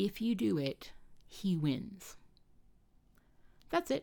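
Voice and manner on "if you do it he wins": very slow stage whisper. Retelling what a tiny inner voice said: retelling a whisper. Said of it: "it just whispered to me and it said".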